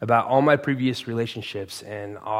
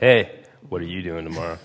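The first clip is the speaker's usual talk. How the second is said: put-on deep, cool-guy delivery; 5 semitones lower than usual. Retelling asking a guy about tomorrow, in a put-on deep cool voice. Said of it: "my deep voice went".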